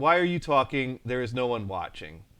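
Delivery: ordinary delivery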